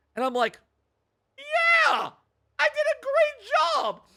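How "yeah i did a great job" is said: acted jolly voice, very high and very slow. Retelling a reply to a congratulating couple: retelling own jovial reply. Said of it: "I am jovial".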